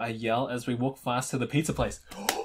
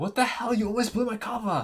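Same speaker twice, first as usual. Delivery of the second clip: angry whisper, higher pitch; 8 semitones higher than usual. Reading a story aloud, a character scolding someone: mad whisper. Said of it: "I say in a mad whisper".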